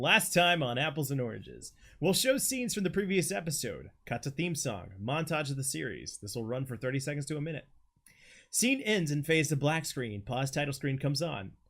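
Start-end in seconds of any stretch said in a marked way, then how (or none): 0.0-1.7 TV announcer voice. Reading a script aloud, opening a new chapter: TV announcer voice. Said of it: "Announcer voice".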